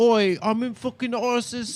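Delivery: mock British accent in a tough-guy voice. Speaker retelling how a British ISIS guy talked, imitating a British ISIS guy. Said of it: "there was that British ISIS guy, He's like".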